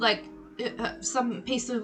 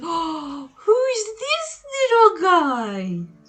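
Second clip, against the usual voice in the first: gushing half-orc voice, higher and louder; 7 semitones higher, 7 dB louder than usual. Voicing the half-orc who gushes over a goat: excited half-orc voice. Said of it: "the half-orc is, like, in eruption, and he comes over and goes".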